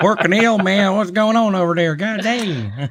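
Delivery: heavy put-on Southern accent. Trying out a voice during a bit, in a thick southern twang. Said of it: "if I let the twang come out to play".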